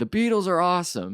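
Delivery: high, loud excited scream. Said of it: "I just scream".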